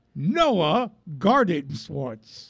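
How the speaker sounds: slow, careful, spelled-out pronunciation.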